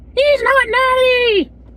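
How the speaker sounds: high-pitched, loud, projecting calling voice. Imitating a coach shocked at a lifter's strength: Coach Greg impression. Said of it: "very good impression if I do say so myself".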